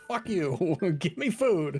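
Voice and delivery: high, stretched-out voice. Acting out how Pancake answered after being told to stop, retelling Pancake's yell. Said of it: "He immediately yells louder".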